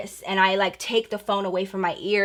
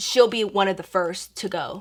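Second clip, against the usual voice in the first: plain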